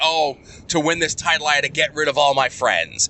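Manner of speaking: ordinary talk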